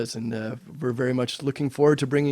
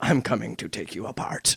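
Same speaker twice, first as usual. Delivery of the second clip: talking like a pirate; 4 semitones lower, 3 dB quieter than usual. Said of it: "I start to talk like a pirate".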